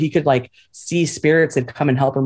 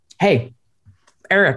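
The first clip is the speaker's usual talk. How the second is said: calling out; 3 semitones higher than usual. Telling a story, the speaker acts out a man calling out to someone, retelling a shout. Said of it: "this guy just shouts".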